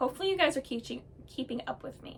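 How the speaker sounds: rattled off very fast, fading to quiet.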